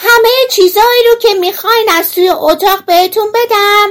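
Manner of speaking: very high, very loud, shrill, all-out yell. Narrator reads a tiny boy calling into the priest's room, in a very loud shout. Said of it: "با صدای خیلی بلندی فریاد زد".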